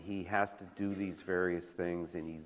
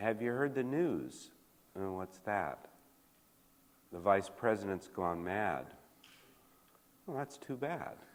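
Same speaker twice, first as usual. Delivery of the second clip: mock flat deadpan tone. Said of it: "it's all done in, in that manner".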